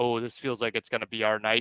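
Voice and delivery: ordinary talk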